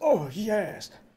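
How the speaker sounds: put-on elderly man's voice. Reading out a chat message aloud: old man's voice. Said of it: "Or was that more of an old man's voice?".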